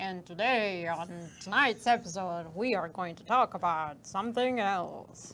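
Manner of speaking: put-on low, vintage old-school radio announcer voice. Picturing another speaker hosting an old-time broadcast: old-school radio show voice. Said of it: "I envision you talking like one of those, uh, old school radio shows".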